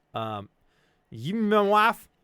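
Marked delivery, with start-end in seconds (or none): 1.1-2.0 put-on very loud, booming, high drunk voice with thick accent. Retelling a drunk man's question while handing over a jar: imitating a drunk man's thick accent. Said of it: "He's real drunk and also real thick accent".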